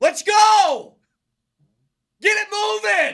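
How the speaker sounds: high, loud, drawn-out impatient shout. Acting out a man shouting in a restaurant line: Mosier impression, shouting. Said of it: "I'm gonna do an impression of Mosier in this line ... He's shouting that".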